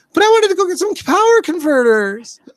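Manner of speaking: put-on whine, very high and loud.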